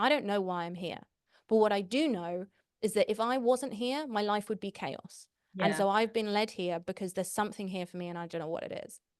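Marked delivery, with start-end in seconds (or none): none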